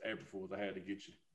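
very calm, hushed, very soft voice. Retelling what she said on the phone, imitating her calmest voice. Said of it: "She said it in the calmest voice".

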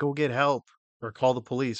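put-on held-back scream, mild and urgent. Retelling a movie scene where a dad yells at his son: imitating a dad screaming. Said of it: "his dad's screaming at him".

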